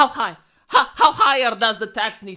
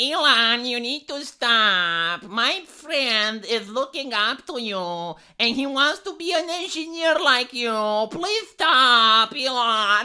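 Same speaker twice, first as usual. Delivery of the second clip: very slow, drawn-out, put-on mocking voice. Acting out someone's plea to Elon, in a put-on voice. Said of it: "let me do the voice because I need to do the voice".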